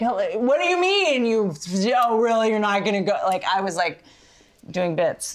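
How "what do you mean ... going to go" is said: loud jeering yell. A speaker recalls talking to the actors on screen, retelling own yelling at screen. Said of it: "I was like yelling".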